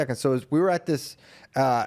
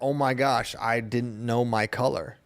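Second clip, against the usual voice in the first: usual speaking voice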